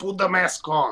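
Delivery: put-on irritated, angry, stern tone. Retelling what a Canadian security guard told him and his wife; imitating an angry voice. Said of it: "in an angry kind of voice".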